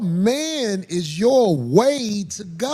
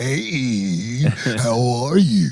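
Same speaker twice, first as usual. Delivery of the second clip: very deep, slow devil voice, one word drawn out; 10 semitones lower than usual. Retelling the devil tempting Eve: devil voice. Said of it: "that's a good devil voice".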